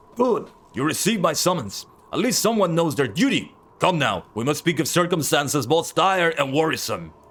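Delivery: extremely rough, overdone gruff voice. Streamer reading a character's dialogue aloud, in an extremely rough voice. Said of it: "I'm trying to make it like ex extremely rough".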